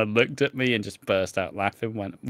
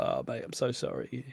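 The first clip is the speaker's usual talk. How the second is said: mock breathy, crying, tearful voice; 10 dB quieter than usual. Retelling how a friend apologized months later: imitating someone crying. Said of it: "when he was crying to me".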